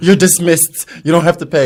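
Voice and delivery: loud, regal, lordly voice. Retelling how a cashier waved away payment: imitating a kingly cashier. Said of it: "kingly waving away".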